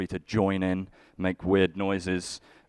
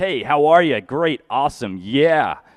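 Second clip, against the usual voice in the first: loud, high, bright, gushing American friendliness; 7 semitones higher, 9 dB louder than usual. Describing what a visiting dad is used to in america: imitating american hospitality. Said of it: "my dad lives in America. So he's used to".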